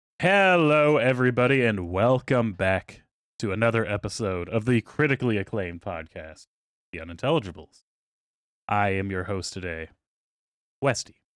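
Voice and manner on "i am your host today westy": halting dramatic pause, lower pitch. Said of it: "I'm William Shatner today".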